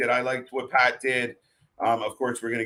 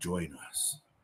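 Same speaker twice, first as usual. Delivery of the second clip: creepy, breathy, quiet whisper; 6 semitones lower, 14 dB quieter than usual. Imagining Jake on a staticky screen in a vignette: creepy Jake voice. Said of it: "he's got that super kind of creepy vo-, voice".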